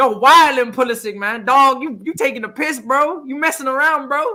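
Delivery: loud, high put-on American accent. Asked by the other speaker to hear it, speaker tries an attempted american accent. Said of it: "let me hear your American accent".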